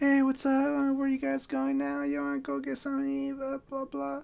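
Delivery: bright, very high, sudden cheery friendly switch. Retelling a drunk friend greeting passing girls: imitating a friend's sudden friendly mood. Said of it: "And then he changes his mood".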